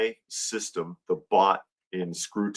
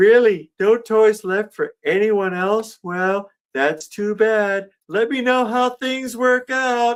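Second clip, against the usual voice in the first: put-on snarky not-caring voice, higher and louder; 6 dB louder than usual. Retelling a Christmas special scene as Pee-wee: snarky, pretending not to care. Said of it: "that snarky attitude of, uh, of, like, pretending to, uh, to not care".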